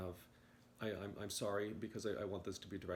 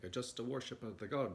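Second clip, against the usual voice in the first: put-on Italian accent, higher; 3 semitones higher, 4 dB louder than usual. A speaker voices someone psychically projecting to them, in an Italian accent. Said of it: "someone with like an Italian accent".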